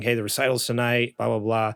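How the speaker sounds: ordinary talk, nothing marked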